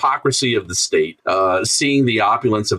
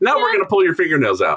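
very high, mocking, sarcastic voice; 9 semitones higher than usual. Imagining a torturer character's line: imitating a sarcastic interrogator. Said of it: "the sarcastic interrogator".

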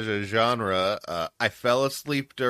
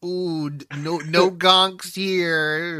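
put-on nerdy voice, higher and louder; 6 semitones higher, 4 dB louder than usual. Showing how they would say the slang, in a nerdy voice. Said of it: "in the most nerdy way possible".

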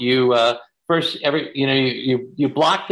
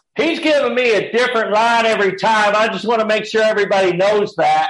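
raised, high-pitched shouting; 7 semitones higher, 3 dB louder than usual. Retelling how William shouted while blocking a scene: imitating William shouting. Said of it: "just shouts".

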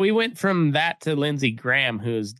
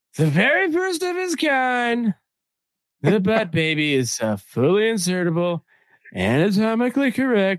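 high, put-on read-aloud voice, "kind" drawn out; 7 semitones higher than usual. Reading a product description aloud in Trump's voice. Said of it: "I should read this in Trump's voice".

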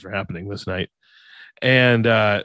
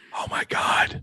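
soft, urgent whisper-shout. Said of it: "repeat whisper to me".

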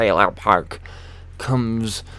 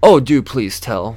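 heavy mock sarcasm, much louder; 7 dB louder than usual. Retelling answering a troll, in the most sarcastic way possible. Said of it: "I'm saying it in the most sarcastic fucking way possible".

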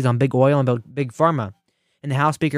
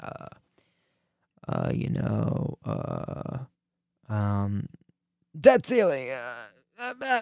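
very slow, drawn-out ramble full of "uh" fillers; 8 dB quieter than usual. Mocking a politician who can't speak, doing a Biden impression. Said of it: "that's my Biden impression".

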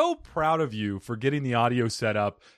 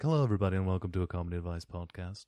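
understated, very low public-radio host murmur; 7 semitones lower, 7 dB quieter than usual. A podcast host shows a subtler way to open the show; subtle NPR host voice. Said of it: "I can be subtle, more like NPR".

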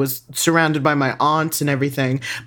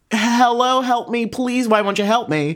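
high-pitched yelling, calling out loudly; 7 semitones higher than usual. Retelling a frightening encounter, calling out for help: imitating someone yelling for help. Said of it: "I yelled".

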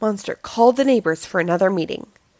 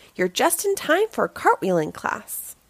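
plain reading voice

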